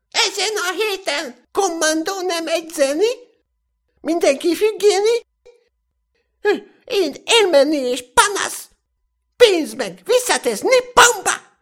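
shouting in a high, shrill falsetto head voice. Reading a story, voice a raging character yelling from atop a sand heap, shouting in high falsetto. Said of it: "kiabálta magas fejhangon".

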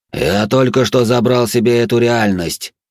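growled demon voice. Reading a fantasy story aloud, voicing the archdemon's line, growled. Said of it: "прорычал архидемон".

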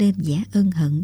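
ordinary delivery

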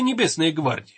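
usual speaking voice

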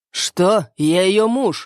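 pressing, defiant, very slow and drawn out. Narrator reads a man confronting another who shields her, defiant challenge. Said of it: "с вызовом напирает Кирюша".

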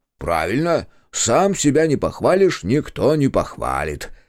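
sarcastic, snide, stretched-out drawl. Zakhar mocks the Italian Giovanni's self-praise; snide drawl. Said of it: "ехидно протянул Захар".

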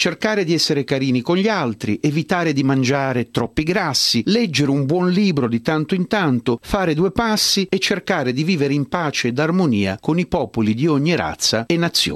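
normal talking voice

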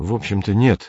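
embarrassed, sheepish, abashed. Komov answers Ryu's question, embarrassed. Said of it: "сказал Комов смущенно".

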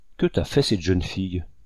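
ordinary delivery

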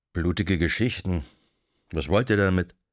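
ordinary delivery

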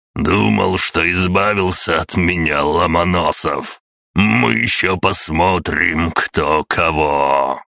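slow growl, "кого" drawn out. Narrator voicing a man who just climbed out of the overturned truck, growled. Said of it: "прорычал".

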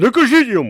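sudden loud outcry. Interrupting talk of a way out, exclaiming. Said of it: "вигукнув Симонія".

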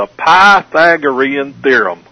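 put-on heavy Texas accent. Imitating a math teacher naming the theorem, in a thick Texas accent. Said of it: "my teacher had a really thick Texas accent... she'd always go".

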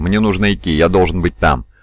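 ordinary delivery, nothing marked

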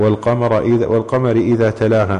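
plain

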